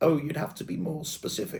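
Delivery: put-on soft, silly, posh southern English London accent. Retelling what he said in the video, in a silly posh London accent. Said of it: "puts on the silly London southern posh voice".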